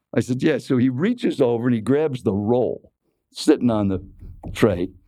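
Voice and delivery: ordinary talk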